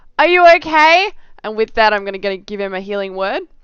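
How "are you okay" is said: very loud, high-pitched shout. Calling out to another character in the game: shouting. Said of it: "I'm gonna shout at Garbo and be like".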